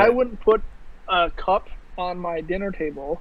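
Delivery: plain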